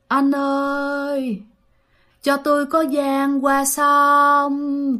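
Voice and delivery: eerie ghostly wail, "ơi" stretched. Telling a scary story, imitating a woman's voice heard at night, moaning. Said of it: "kêu mà rên rỉ mà nó văng vẳng".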